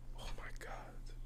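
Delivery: stunned, soft whisper, barely voiced, breathed out.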